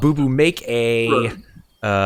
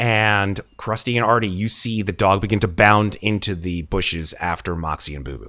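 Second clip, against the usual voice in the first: ordinary talk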